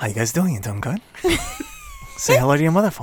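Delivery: animated, swooping, sing-song put-on voice, wide pitch swings. Doing an impression requested by another speaker: Mark Wahlberg impression. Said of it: "give me the Wahlberg".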